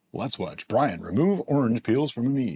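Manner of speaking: broadcast-style TV announcer voice. Speaker removing orange peels from a mead on camera narrates in his announcer voice. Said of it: "It's my announcer voice".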